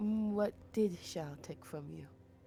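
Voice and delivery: speaking softly. Game master voicing a character who side-eyes another and asks, speaking softly. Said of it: "and says softly".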